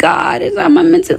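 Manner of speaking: dry, tearless fake crying, very high pitched. Speaker acts out how she talked about being meant for this: imitating tearless fake crying. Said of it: "like that, no tears".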